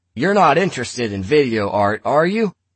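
loud, high-pitched voice. Tom turns to Lena and asks her a question: said loudly. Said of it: "Tom turned to Lena and said loudly".

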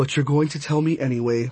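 ordinary delivery, nothing marked

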